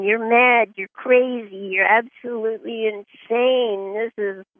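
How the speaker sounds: ordinary talk, nothing marked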